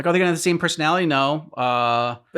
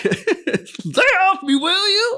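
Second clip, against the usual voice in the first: very high, drawn-out, stretched yell. Imitating the voice actress for Bulma yelling: imitating Bulma yelling. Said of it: "I would want her to, like, yell at me".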